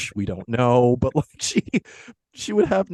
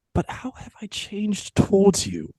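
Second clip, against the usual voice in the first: put-on English accent with raised pitch; 8 semitones higher than usual. Acting Scrooge's breakup scene with Belle: Scrooge in put-on English accent. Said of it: "I'm going to try an accent for this one".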